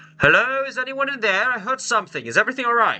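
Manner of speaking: put-on very high, old-fashioned, old-timey 1920s-style voice. Voicing a distant stranger calling into a cave: 1920s-style voice. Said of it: "You sound like a nineteen twenties Connie".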